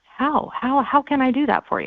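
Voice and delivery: gentle curious tone. Coaching how to ask John a question without sounding defensive, very soft, curious. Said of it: "very softly saying".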